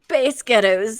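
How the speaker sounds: put-on Scottish accent. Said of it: "say Spice Girls with a Scottish accent".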